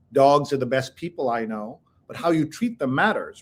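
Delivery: ordinary talk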